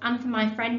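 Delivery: ordinary delivery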